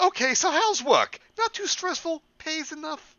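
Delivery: shrill, loud, very high-pitched nagging voice. Role-playing a mom asking her kid about work, Sheila Broflovsky voice. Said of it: "go full Sheila Broflovsky here".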